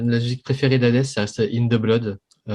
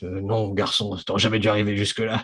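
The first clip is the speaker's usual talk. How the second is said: deep commanding character voice; 2 semitones lower than usual. Recalling the first boss fight, quoting the boss in big Hades voice. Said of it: "avec sa grosse voix qui dit".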